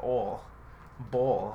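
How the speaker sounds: put-on heated New York accent slipping out on bowl. Imitating how a woman's new york accent comes out when heated. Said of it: "her New York accent starts coming out and she's just like".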